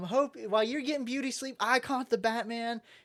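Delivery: put-on bragging tone. Retelling a capture being celebrated: imitating bragging. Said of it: "still, like, bragging".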